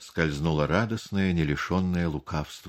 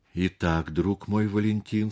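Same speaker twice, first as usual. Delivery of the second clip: usual speaking voice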